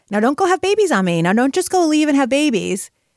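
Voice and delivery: playful, teasing, joking delivery pitched high. Recalling what the woman who hired them said to the young women, retelling a joking remark. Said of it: "she jokingly said to all of us".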